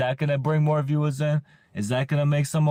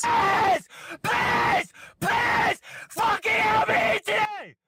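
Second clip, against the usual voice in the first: screaming desperate pleading, much higher. A streamer begs his viewers for tips at his camera, screaming desperate pleading. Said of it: "He's literally screaming please at his camera".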